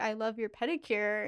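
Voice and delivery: plain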